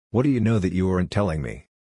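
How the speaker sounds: ordinary delivery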